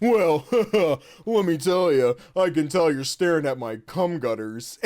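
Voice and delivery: put-on bro-dude voice.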